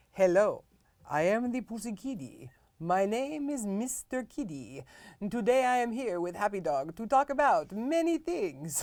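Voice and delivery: put-on voice with a Transylvanian accent. Opening a show with a co-host, as Mr. Kitty, Transylvanian accent. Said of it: "why do I sound like I am from Transylvania?".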